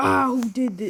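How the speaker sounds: weak, tired, half-hearted cartoon barkeep voice. Describing a character looking at his tavern: bad Moe voice. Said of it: "I'm terrible at making his voice".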